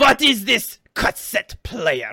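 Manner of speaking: clumsy, fake, unconvincing German accent. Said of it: "That's not a German accent".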